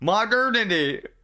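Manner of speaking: high-pitched, yelled-out single word. Pronouncing a word that keeps tripping them up: yelling the word. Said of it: "I'm gonna have to yell it like that".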